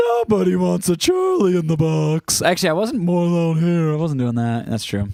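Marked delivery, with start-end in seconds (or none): 0.0-2.4 slow, deliberate character voice, each word drawn out. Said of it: "I was doing the Charlie in a Box from the Rudolph movie".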